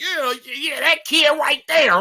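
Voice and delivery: heated, going-off, angry ranting tirade. Retelling how a lady pointed at a kid: imitating a woman going off. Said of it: "while she was going off".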